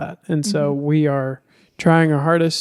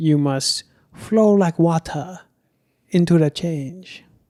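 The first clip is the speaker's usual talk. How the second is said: practised, put-on German accent. Speaker jokes while giving advice about priorities, fake German accent. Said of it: "It's a nice German accent I've been working on".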